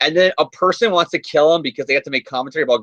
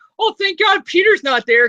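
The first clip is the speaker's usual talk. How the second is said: mocking, very high-pitched voice with mock relief. Mocking how Aunt May talks in a comic: mocking Aunt May voice. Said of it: "and then she's like".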